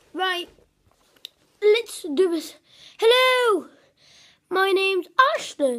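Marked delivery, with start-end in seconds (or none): 3.0-5.8 put-on slow London accent, each word deliberate. Doing an impression of a friend from London: imitating Ashton with a London accent. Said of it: "I think that sounds like someone from London".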